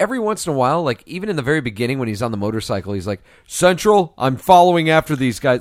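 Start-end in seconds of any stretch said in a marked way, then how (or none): 3.5-5.6 very loud, full, projected, radio-style voice. Imitating a film character calling in from a motorcycle: fuller Dredd voice. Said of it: "a more full voice".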